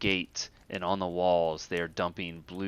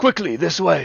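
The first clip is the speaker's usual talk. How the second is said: very loud, shrill, very high-pitched, urgent voice; 10 semitones higher, 11 dB louder than usual. Voicing the captain who runs up during the siege: urgent captain in battle. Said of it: "He looks at you and goes".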